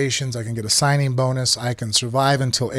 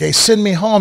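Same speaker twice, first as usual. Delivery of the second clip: insistent, loud, high-pitched hollering scream; 7 semitones higher, 6 dB louder than usual. Retelling wanting to be released, imitating own screaming. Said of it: "I'm the guy screaming, like".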